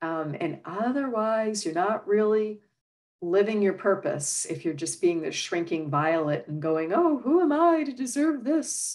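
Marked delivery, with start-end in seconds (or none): 6.9-9.0 very high, squeaky, bad Southern belle voice. Describing someone who acts like a shrinking violet, in a bad Scarlett O'Hara impression. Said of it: "that's my bad impression of Scarlett O'Hara".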